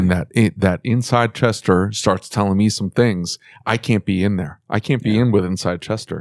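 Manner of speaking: ordinary talk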